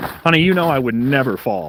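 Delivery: heavy, very sarcastic tone. Answering a warning not to fall: heavy sarcasm. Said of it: "with the biggest amount of sarcasm".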